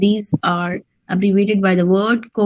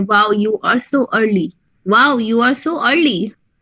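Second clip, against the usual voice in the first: mocking, sarcastic tone. Showing how a teacher greets a student who enters late: sarcastic tone. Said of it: "this was a sarcastic statement".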